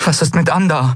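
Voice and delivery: insistent, urgent, pressing tone at very high pitch. Reading Andriel pressing Kai for news of Andar: urgently pressing. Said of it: "drängte Andriel".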